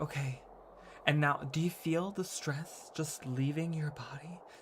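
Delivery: gentle, soft, hushed ASMR murmur. Retelling what a yoga video instructor said: imitating soft ASMR talk. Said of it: "she would talk really softly".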